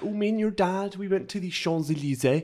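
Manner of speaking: put-on French accent. Imitating their French-teacher mum from Bristol speaking French, in a put-on French accent. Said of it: "she would do French and she would sound".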